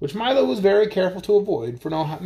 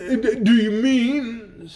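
stammering and faint, much slower; 4 semitones higher than usual. Reading a story, the bug questions the king and the mathematician: stammering, feeling faint. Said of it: "stammered the bug".

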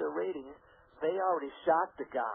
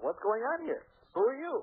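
mock insistent, pitched-up, demanding tone; 8 semitones higher than usual. Retelling confronting a state trooper at a roadblock, retelling a demand. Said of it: "I demanded".

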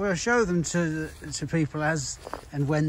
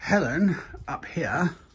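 put-on la-di-da posh accent. Presenting a nursery's weekly potting video, the speaker calls someone up: posh voice. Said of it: "that's my posh voice".

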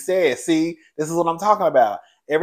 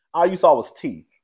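plain

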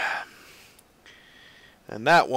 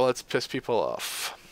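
normal talking voice

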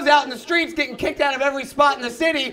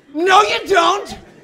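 loud high shouting. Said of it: "And I'm always like".

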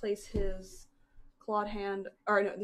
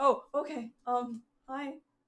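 put-on dazed voice, pitched higher; 4 semitones higher than usual. Hugged just after being revived, Runner responds, dazed and confused.

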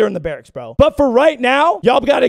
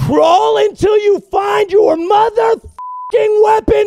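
play-acted shrill yelling, very high-pitched; 10 semitones higher than usual. Quoting what one man yells at another, retelling a man's yell. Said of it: "I love how he's yelling at him".

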